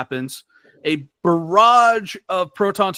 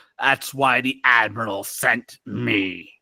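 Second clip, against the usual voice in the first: slow, mechanical, machine-like robotic voice; 7 semitones lower than usual. Voicing a red-robed figure on a command bridge: mechanical voice. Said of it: "you hear the mechanical voice go".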